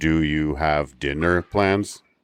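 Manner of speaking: flat, robotic, monotone line reading. Imitating an actor's dialogue from an old show: robotic Gene Rayburn line reading. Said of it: "He delivers his lines like a robot".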